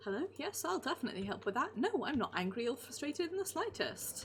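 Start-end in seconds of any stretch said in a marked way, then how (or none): 0.0-1.8 courteous, polite customer-service voice. Showing the voice used when answering a client, polite customer-service voice. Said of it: "my answering a, a client voice is".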